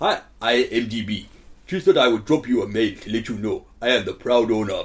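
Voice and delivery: Somali accent in a pirate captain voice. Reading out an email in a Somali pirate accent. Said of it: "I'm going to do it in a Somalian pirate".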